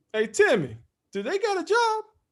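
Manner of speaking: teasing, jabbing delivery.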